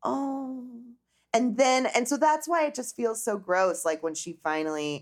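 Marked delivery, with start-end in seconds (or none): 0.0-0.7 high, syrupy, sugary-sweet, saccharine "oh". Retelling how a reunion guest spoke: imitating a saccharine voice. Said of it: "really saccharine voice that's like".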